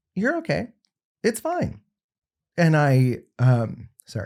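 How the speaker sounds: slow, choked-up voice, pitch swinging. Telling a story about a conversation with her, choked up. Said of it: "I didn't think I'd get choked up over this".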